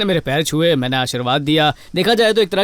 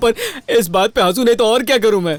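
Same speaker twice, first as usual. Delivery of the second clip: high-pitched, amused, laughing through the words; 5 semitones higher than usual. In a drama, answering the news that Nitya loves him, laughing while talking. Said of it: "मैं हंस रहा हूँ".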